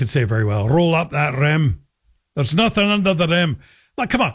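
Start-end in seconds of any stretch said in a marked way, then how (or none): 0.7-1.8 put-on Scottish accent, much slower. Imagining how their wife would say a contest slogan, in her Scottish accent. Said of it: "how my wife would say it. Being from Scotland".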